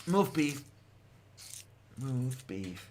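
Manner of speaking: silly voice for talking to a cat. Showing the different voice used with the cat, voice for talking to the cat. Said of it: "that's the way I talk to the kitty".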